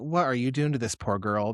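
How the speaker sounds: ordinary talk, nothing marked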